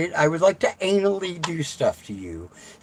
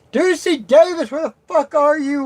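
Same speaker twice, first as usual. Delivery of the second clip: loud, high-pitched shouted yelling outburst; 11 semitones higher, 5 dB louder than usual. The speaker vents at a phone while calling for someone, yelling. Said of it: "Why am I yelling at this phone?".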